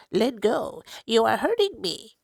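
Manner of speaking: nasal, pinched through-the-nose voice. Reading a story aloud to a listener, in Elephant's Child nasal voice. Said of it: "speaking through his nose, like this".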